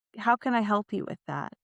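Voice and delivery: ordinary talk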